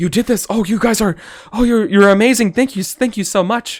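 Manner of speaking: very high, stunned, shocked little mouse voice. Voicing a mouse pointing at dead weasels, thanking the party: shocked mouse. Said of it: "just shocked".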